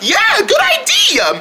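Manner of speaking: very high, laughing, admiring voice.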